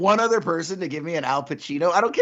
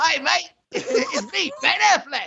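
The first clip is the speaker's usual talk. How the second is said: put-on Australian accent, high-pitched and unhurried; 7 semitones higher, 3 dB quieter than usual. Imitating a friend's ben affleck impression that came out australian. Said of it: "that's exactly what it sounded like".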